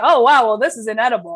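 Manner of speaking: put-on thick sarcasm. Recounting a meal they were eating and mock-complaining about: acting out thick sarcasm. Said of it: "it's just like thick with sarcasm".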